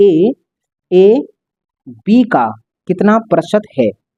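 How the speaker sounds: slow, short pause after the first ए. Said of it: "यहाँ थोड़ा सा रुका जाएगा, इसका मतलब है थोड़ा ठहराव".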